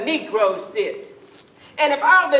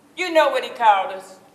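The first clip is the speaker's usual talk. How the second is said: ordinary delivery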